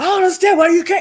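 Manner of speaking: loud screaming at the top of the lungs. Retelling what another speaker yelled during an argument: imitating someone screaming. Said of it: "screaming to the top of your lungs".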